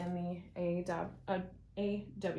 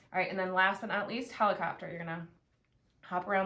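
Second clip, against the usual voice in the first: usual speaking voice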